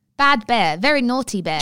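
put-on spoken in British accent. Repeating an actress's words to a bear on request, in a british accent. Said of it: "Say it again".

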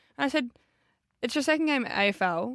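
ordinary talk

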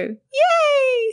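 very high, peppy, drawn-out cheerleader cheer. Speaker demonstrates larynx movement with different sounds, cheerleader yay. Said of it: "like a cheerleader".

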